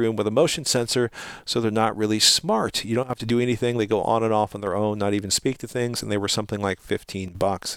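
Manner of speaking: normal talking voice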